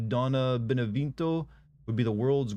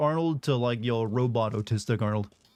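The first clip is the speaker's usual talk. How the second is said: ordinary talk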